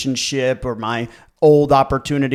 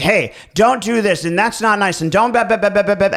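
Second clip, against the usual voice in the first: chiding, disapproving, scolding voice; 7 semitones higher than usual. Retelling how a stepmom told a parent and child off: imitating stepmom's scolding. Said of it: "And my stepmom's like".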